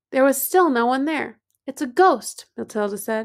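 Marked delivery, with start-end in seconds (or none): none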